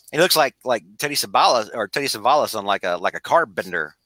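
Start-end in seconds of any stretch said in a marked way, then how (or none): none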